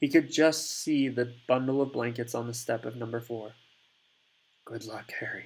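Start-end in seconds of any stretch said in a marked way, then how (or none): 4.7-5.5 hushed murmur, barely above a breath. Reading a character's farewell to a baby aloud: murmured. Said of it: "he murmured".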